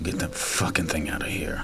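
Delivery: mock under-breath mutter. Retelling what a man walking past muttered, under his breath. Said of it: "you hear under the under his breath".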